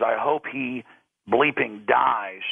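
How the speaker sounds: mock nasty, spiteful, slow mean voice. Retelling what a man on the phone said to his wife: imitating a mean voice. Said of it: "in a mean voice".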